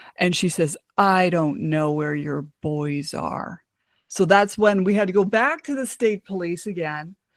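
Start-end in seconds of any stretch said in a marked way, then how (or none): 1.0-3.6 play-acted low, slow, menacing, ominous, sinister voice. Retelling how the ex-mother-in-law answered when asked where the boys were, imitating a sinister voice. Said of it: "she answered me in this sinister voice".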